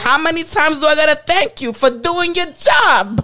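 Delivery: put-on Italian-American accent. Quoting Cuomo's reply to Trump, in Cuomo's Italian-American accent. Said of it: "in his Italian voice".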